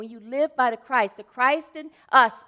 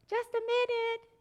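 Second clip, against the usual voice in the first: mock-feeble old lady voice, higher, quieter; 11 semitones higher, 8 dB quieter than usual. Retelling an old lady answering the door, imitating a weak, feeble voice. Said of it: "this weak, feeble voice".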